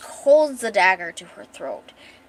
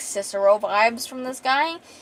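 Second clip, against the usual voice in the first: ordinary talk, nothing marked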